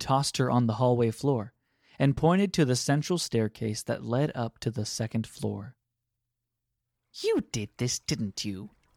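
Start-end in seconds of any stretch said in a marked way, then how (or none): 7.1-8.7 swooping, scornful, contemptuous sneer. Reading a woman accusing another character she tossed down, sneering. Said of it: "sneered the woman".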